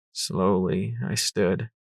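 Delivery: plain reading voice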